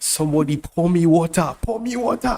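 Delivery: imitated Nigerian accent. Quoting what a friend says after a good move: Nigerian accent. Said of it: "in Nigerian accent".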